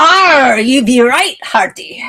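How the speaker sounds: booming pirate voice. Replying to a mention of Talk Like a Pirate Day: pirate voice. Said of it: "is Talk Like a Pirate Day".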